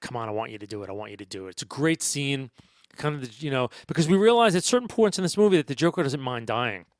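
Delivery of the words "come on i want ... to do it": put-on muttering under the breath, much quieter. Recounting a film scene, quoting a character's line: retelling a muttered line. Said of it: "the Joker's muttering under his breath".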